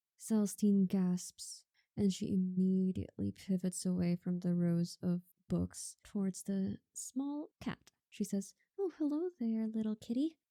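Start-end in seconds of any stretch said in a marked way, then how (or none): 8.8-10.4 quick, cooing pet-talk voice. Narrating Celestine greeting a small cat that meows; soft cooing voice. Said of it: "She coos. Her voice is soft".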